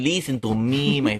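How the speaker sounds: slow, weird, bad fake Russian accent. Imagining what Valken would sound like with a voice, weird Russian Valken voice. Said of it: "this like weird Russian fucking".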